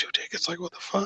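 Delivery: barely audible, whispered mutter under the breath. Retelling being given two tickets in court, the speaker recalls reacting, muttering under breath. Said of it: "under my breath".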